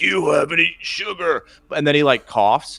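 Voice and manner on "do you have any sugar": high-pitched demonic voice. Retelling a movie scene where he comes to the door: demonic voice. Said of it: "a demonic voice".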